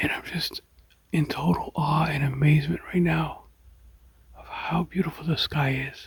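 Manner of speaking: speaking quietly. Filming the sky very early in the morning, speaking quietly. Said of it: "I'm trying to be quiet".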